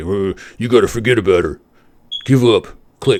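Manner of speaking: nasty, menacing, threatening thug voice. Retelling a stranger's phone call meant to scare, imitating a caller's terrible voice. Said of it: "in a terrible voice".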